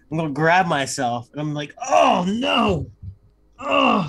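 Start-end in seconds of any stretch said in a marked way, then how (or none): 1.8-4.1 high groans as if in serious pain. Voicing a character faking a fit on the floor: acting in serious pain. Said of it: "start writhing down on the floor like I'm in serious, serious pain".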